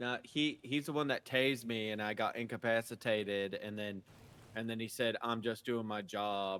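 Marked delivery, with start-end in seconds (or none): 5.2-6.6 put-on droning flat monotone, slower. Retelling what the man who tased them kept repeating, imitating a flat monotone. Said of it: "really monotone like".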